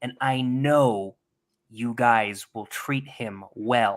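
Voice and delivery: firm, really stern voice, pitched low. Retelling a church leader announcing an elder coming home early: imitating a stern tone. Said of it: "in kind of like a really stern tone".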